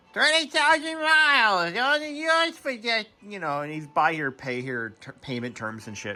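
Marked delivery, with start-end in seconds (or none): 0.2-3.1 poorly done put-on New England accent, higher. Retelling local tv used car ads: imitating a used car dealer with a terrible new england accent. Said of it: "hawking shitty cars with a terrible New England accent".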